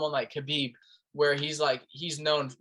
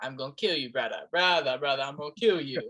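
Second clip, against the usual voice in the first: put-on Russian accent with tough-guy voice. Describing people you don't want to mess with, doing a Russian accent. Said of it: "and and their accent too".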